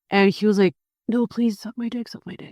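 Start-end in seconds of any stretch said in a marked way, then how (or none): 1.0-2.5 repeated, pitched-up begging and pleading. Retelling what a man said behind a church: imitating someone pleading. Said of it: "he was pleading for me".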